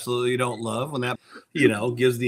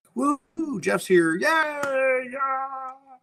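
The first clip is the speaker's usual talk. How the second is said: very high, slow puppet voice, "yeah" stretched out; 13 semitones higher than usual. Cheering Jeff's arrival, in a Kermit the Frog voice. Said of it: "I wanted to Kermit the Frog mode there".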